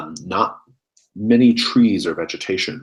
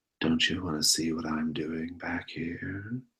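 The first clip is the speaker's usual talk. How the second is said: eerie, creepy, very quiet, breathy half-whisper, close; 10 dB quieter than usual. Narrating a game scene, voicing a half-whisper in a character's ear, creepy half-whisper. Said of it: "there's a voice whispering in your ear".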